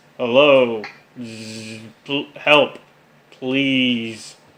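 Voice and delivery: faint, very slow, low, buzzing, drawn-out droid monotone. Narrating a scene where a voice calls out from an alley: low buzzing monotone droid. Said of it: "a low and monotonous voice calling out. The voice is buzzing and faint".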